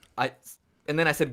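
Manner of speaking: normal talking voice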